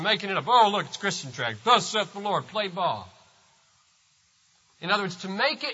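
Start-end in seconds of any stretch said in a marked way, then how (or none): 0.5-3.1 scornful, mocking, sneering tone. Retelling again how a passerby mocked a tract: imitating mockery. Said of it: "which was just mockery".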